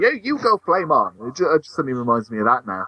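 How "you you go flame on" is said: put-on high, very encouraging cheering announcer voice. Retelling how a cartoon's opening announcer called out: imitating a very encouraging announcer. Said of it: "in this sort of very encouraging".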